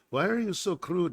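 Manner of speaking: put-on Belgian or Swiss accent. Retelling what a girl once dating asked: imitating a belgian or swiss accent. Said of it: "She was Belgian or Swiss or something, so she said it that way".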